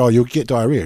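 ordinary talk

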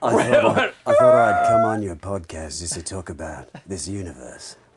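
very low, loud voice dropped deep into the throat. Pretending on the podcast to be Tom Hardy: throaty Tom Hardy voice. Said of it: "our throaty, uh, uh, Tom Hardy voice".

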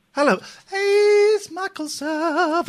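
heavenly put-on voice. Podcast host greets a caller on the phone line, angelic voice. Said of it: "I did an angelic voice there".

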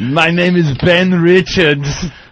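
slow, awful German accent.

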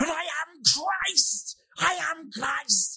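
slow, drawn-out, exalted, grand delivery, very high. Retelling a one-man stage show, imitating Klaus Kinski proclaiming. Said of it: "Like that".

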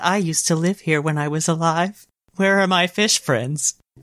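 sad, mournful creature voice. Voicing a sad resurrected fossil Pokémon missing its home: sad voice of a resurrected fossil Pokémon. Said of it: "I can see him saying that in that voice".

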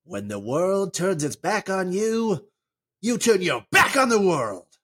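bad, clumsy cartoon voice, pitched high. Asking the other speaker what Timon says, then answering: terrible Timon impression. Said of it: "That was a terrible Timon impression".

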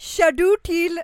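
full-throated, very loud, high-pitched shout. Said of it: "nu skriker du".

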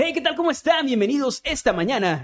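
radio announcer voice. Asked to send a greeting like a radio announcer, the speaker shows it: radio announcer voice. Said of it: "como locutor me suena más a".

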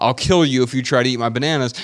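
plain

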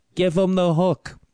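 put-on high old man vaudeville heckling yell. Retelling a heckle from the crowd, the speaker imitates an old man's yell. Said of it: "he yells like".

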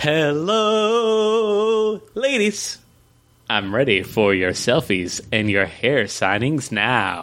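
theatrical, sing-song, swooping reading, "hello" stretched. Performing a dramatic reading of a comic panel: sing-songy dramatic reading. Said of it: "let's have a dramatic reading".

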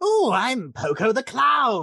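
very slow, loud, swooping cartoon villain voice. Quoting a clown character's line: Mark Hamill Joker voice. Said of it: "that was a damn good Mark Hamill Joker".

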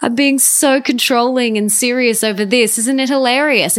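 high, light, amused, self-mocking laugh.

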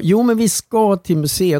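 stubborn insistent tone. Retelling a stressful trip before a flight: imitating Göran insisting. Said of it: "du bara propsar på".

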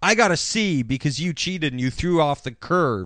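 plain

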